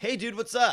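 really loud, high-pitched, casual delivery. Speaker imitates a man sitting close in a steam room: imitating a really loud greeting. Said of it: "Like really loud".

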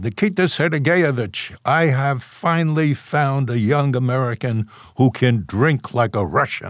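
mock grand proclaiming, loud for all to hear. Recounting the marshal speaking to Khrushchev while walking over, imitating Zhukov's very loud voice. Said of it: "in a very loud voice".

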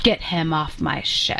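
acted, very authoritative, commanding captain-like voice. Recapping a show, quoting the captain's last order, mock-authoritative command. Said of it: "In a yeah. very authoritative tone, like that".

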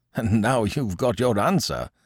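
chuckling while speaking. After a lady rebuffs a man, another man remarks to him, chuckling. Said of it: "chuckled Binet".

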